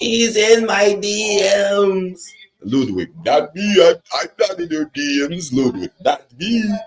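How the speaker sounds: very high, weird, cringy mocking put-on voice. Mocking both sides of a boring feud, in a weird, cringy voice. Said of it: "with a weird, cringy voice".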